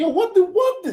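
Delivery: put-on high-pitched, shocked, disbelieving kid-like outburst. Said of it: "And I was just like".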